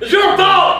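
frantic, very high, accusing yell. Arguing with another speaker over whose fault it is: yelling. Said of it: "Stop yelling!".

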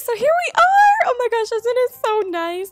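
high, loud, gushing delight.

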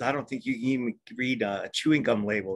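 ordinary talk

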